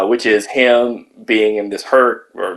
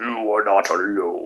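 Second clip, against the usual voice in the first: creepy put-on alien villain voice, quieter; 7 dB quieter than usual. Retelling Zod's broadcast from the movie: creepy Zod voice. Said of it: "and he's like".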